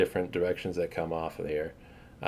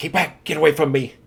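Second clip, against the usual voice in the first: high, loud, rushed, frightened, panicked shout; 8 semitones higher, 5 dB louder than usual. Voicing a dirty, disheveled halfling holding a scimitar: panicked halfling warning. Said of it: "and he says".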